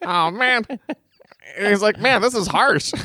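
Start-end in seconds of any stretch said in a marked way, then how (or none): 2.0-2.9 mock-hurt tone, much faster pace. Retelling how a man reacted to a harsh remark about him, mock-hurt. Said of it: "Just him being so hurt".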